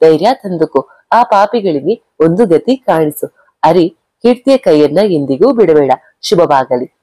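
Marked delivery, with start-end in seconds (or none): none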